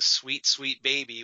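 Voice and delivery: voiced stage whisper. Recalling a father's voice heard in a show: imitating a half-whisper. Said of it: "whispering once again".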